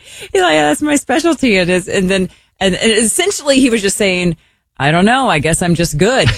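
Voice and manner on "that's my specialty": put-on Norwegian accent, much higher, slower. Retelling what a man said after getting a compliment, in a norwegian accent. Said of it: "this is [name]'s Norwegian accent".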